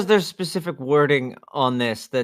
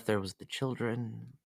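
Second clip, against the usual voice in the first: very soft, quiet mutter under the breath; 3 semitones lower, 15 dB quieter than usual. Speaking in character after checking nobody important is around: quietly under his breath. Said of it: "He still says it quietly under his breath".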